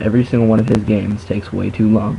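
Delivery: normal talking voice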